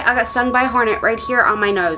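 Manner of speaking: plain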